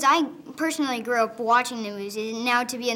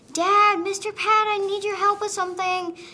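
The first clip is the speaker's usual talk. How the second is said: mock, very high-pitched, shrill calling yell; 9 semitones higher, 4 dB louder than usual. Speaker retells hiding in a cabinet and calling out for Dad: retelling own yell. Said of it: "I yelled".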